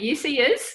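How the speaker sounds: rushed, run-together New Zealand accent.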